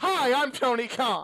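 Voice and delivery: very slow, deliberate, drawn-out delivery, every word stretched. Retelling a huge announcement at a show: imitating Tony Khan. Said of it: "he's Tony Khan, and he was gonna lay".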